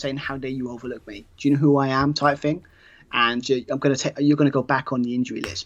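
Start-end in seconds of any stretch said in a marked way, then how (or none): none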